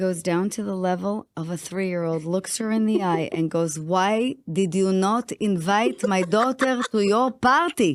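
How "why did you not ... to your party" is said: put-on Israeli accent. Recounting her mother confronting a girl over a party invitation, in a heavy Israeli accent. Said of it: "With her heavy Israeli accent".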